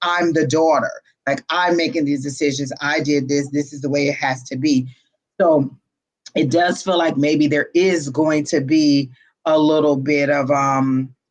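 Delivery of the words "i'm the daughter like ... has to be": ordinary talk, nothing marked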